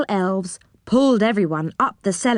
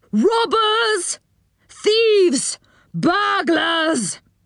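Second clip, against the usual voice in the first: shrill, very high, loud shout; 9 semitones higher than usual. Narrator reads the enchanter calling out at the intruders, shouting loudly. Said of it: "shouted the enchanter in a loud voice".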